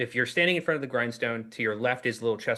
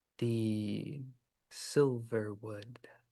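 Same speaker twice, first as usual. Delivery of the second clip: quiet, soft, hushed, stretching the "the"; 8 dB quieter than usual. Narrator voices something speaking to the player in a different voice: quiet, soft voice. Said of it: "it says quietly, softly".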